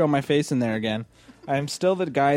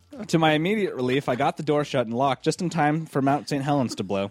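ordinary talk, nothing marked

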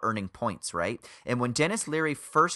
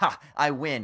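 usual speaking voice

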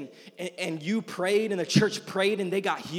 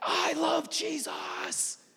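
acted breathy whispered exclamation; 8 semitones higher, 4 dB quieter than usual. Imitating someone after God's presence fell at night: imitating someone shouting.

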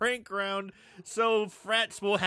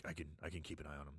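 put-on low creepy voice, lower and quieter; 24 dB quieter than usual. Quoting Barkus offering to hold the panties: Barkus's low voice. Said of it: "his voice gets real low".

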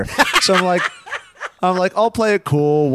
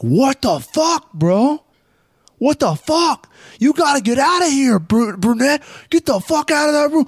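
put-on shrill yelling, very high-pitched; 12 semitones higher than usual. Telling a party story, retelling a dude who started yelling. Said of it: "This dude just started yelling like".

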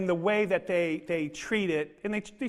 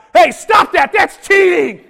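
booming, shrill, very high, very loud holler; 11 semitones higher, 18 dB louder than usual. Retelling yelling at grandkids lighting marshmallows: retelling own yell. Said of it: "I yelled out".

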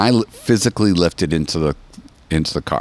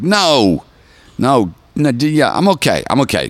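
very slow, high, sheepish embarrassed voice; 6 semitones higher than usual. Retelling own reply when asked "did you say something": imitating own embarrassed denial. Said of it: "and I'll be a little embarrassed".

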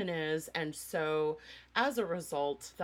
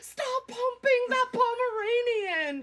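very high, shrill, very slow, drawn-out shout; 8 dB louder than usual. Retelling watching a dog on the phone from Barcelona: retelling yelling at a phone. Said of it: "I'm like yelling at my phone".

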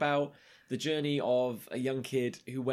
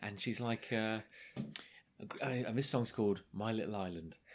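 normal talking voice

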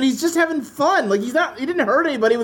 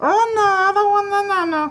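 put-on weird baby voice, much higher; 6 semitones higher than usual. Retelling how a pet chameleon reacted, in a weird baby voice. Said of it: "He had a weird, like, baby voice".

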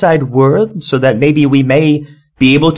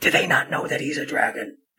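barely voiced hushed whisper, very quiet; 12 dB quieter than usual. A player's character leans back to ask Hank a question, whispering. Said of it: "like whisper in like Hank's ear".

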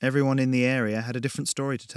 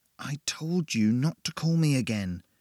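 words hissed out; 2 semitones higher than usual. Narrator steps away from Barry and hisses at the caller: hissed. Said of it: "I hissed".

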